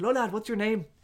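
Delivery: curmudgeonly Irish man voice. Retelling how men at the castle greeted a friend: imitating a curmudgeonly irish man. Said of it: "curmudgeon-y looking Irish dudes".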